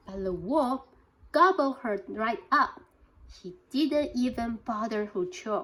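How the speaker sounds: plain reading voice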